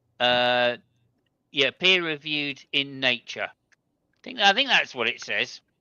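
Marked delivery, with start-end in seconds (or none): 1.7-5.6 dry, mocking sarcasm with swooping intonation. Pointing out a label on an advertisement to other speakers: sarcastic. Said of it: "I'm being sarcastic".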